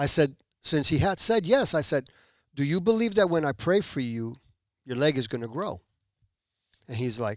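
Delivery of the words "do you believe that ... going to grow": ordinary talk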